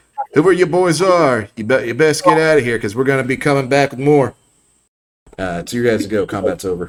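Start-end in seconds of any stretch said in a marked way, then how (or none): 0.4-4.4 distant, high, shouted call. The narrator voices the chief calling to the players from the woods: yelling. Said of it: "You hear the chief yelling in the woods".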